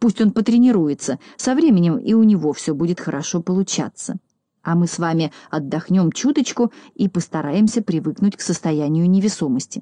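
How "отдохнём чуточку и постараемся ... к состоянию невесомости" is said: ordinary delivery, nothing marked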